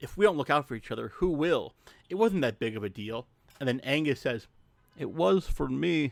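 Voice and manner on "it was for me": terrible fake Scottish accent, slow and drawn out. Recapping a film scene, quoting Angus's reply in a bad Angus impression. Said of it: "that's my Scottish impression, which is terrible".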